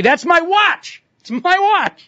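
mock very high, accusing, drawn-out yell. Retelling how a man ran up behind him in a store, imitating a man yelling. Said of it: "starts yelling".

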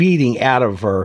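ordinary delivery, nothing marked

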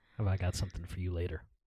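very low, hushed, creepy, menacing, ominous tone. In a movie trivia chat, one speaker says this ominously. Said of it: "I said that really ominously".

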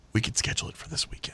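hushed whisper, like a secret.

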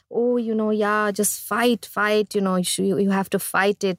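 ordinary talk, nothing marked

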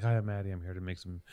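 very quiet, low, hushed, understated and subtle voice. Teasing Maddie for being subtle, doing a low-key Maddie impression. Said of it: "You're just very low-key and subtle".

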